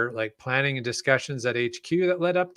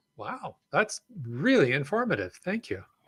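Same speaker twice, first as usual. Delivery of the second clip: sounding genuinely amazed, surprised and impressed; 3 dB quieter than usual. Reacting right after another speaker gives an informative answer, surprised. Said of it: "you sound so surprised".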